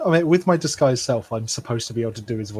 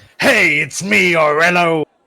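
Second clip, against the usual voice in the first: very loud, straining, high, drawn-out, constipated-sounding voice; 5 semitones higher, 9 dB louder than usual. Voicing a disguised character after agreeing to try: strained Aurelio voice. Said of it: "You sound like you're heavily constipated".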